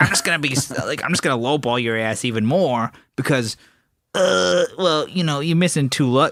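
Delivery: put-on cartoonish character voice. Imagining a buyer lowballing him over two missing lugs, in a cartoon voice. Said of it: "making that like cartoon voice".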